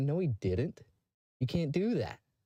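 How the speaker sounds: put-on chuckling, disbelieving, dismissive tone. Retelling a father answering a security guard: imitating laughing disbelief. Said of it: "my dad starts laughing at him and said".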